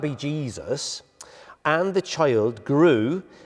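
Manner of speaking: very slow, drawn-out, put-on West Country accent. Reading Luke chapter 2 aloud, West Country accent. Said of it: "I'll stop the accent now".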